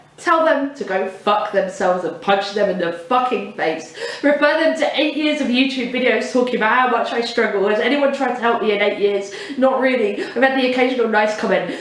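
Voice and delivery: ordinary talk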